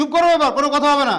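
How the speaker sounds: loud, angry, high-pitched.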